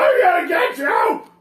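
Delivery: furious yelling. A game narrator voices a man stomping toward the door after someone: angry threatening shout. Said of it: "get up and like stomp towards the door".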